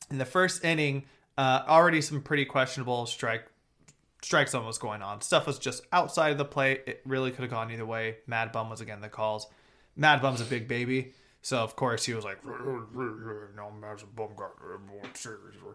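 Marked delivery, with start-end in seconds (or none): 12.4-15.5 low, very soft creepy drawl, "no" stretched. Retelling a pitcher arguing calls after the first inning: imitating Madison Bumgarner. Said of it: "that's what he sounds like".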